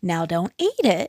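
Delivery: playfully teasing. A witch, setting an oatcake on the step, speaks to her cat: teasing. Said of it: "she teased him".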